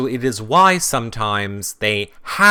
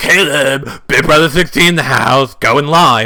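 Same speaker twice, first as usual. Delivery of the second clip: loud, mocking, hyped-up intro voice; 4 semitones higher, 7 dB louder than usual. Telling Caleb to stay out of their room: imitating Caleb going live. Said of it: "don't come in our G D room and be like".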